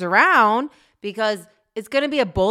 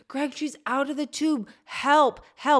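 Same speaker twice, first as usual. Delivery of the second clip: high, held-back cry, like a scream; 6 semitones higher, 4 dB quieter than usual. Recalling the accident, the speaker reenacts screaming to Greg for help. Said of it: "and I'm screaming".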